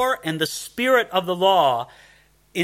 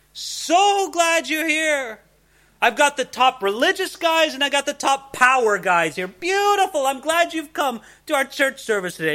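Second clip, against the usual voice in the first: put-on gushing friendly host voice, pitched up; 8 semitones higher than usual. Speaker acts out a greeting John never gave, mock-welcoming greeting.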